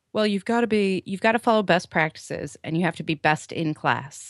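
plain

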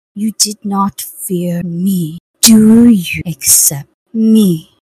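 slow, deliberate voice of the goddess of death. A game master voicing the goddess of death offering the adventurers her mantle, goddess of death voice. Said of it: "You're accepting it from the goddess of death. / You're accepting it from the goddess of death".

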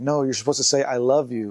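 ordinary talk, nothing marked

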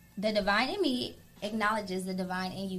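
ordinary talk

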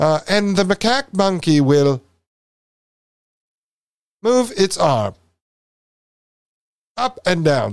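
theatrical put-on British accent. Imitating a guy who makes everything dramatic, in a dramatic british accent. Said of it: "this guy likes to make everything dramatic in the British accent, so he's like".

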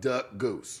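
odd loaded delivery, low and soft. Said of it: "Why you say it like that?".

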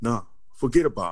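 wiseguy gangster voice. Retelling how a man said a phrase, doing a mobster impression. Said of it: "he sounded just like a mobster".

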